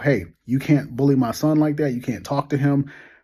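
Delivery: ordinary delivery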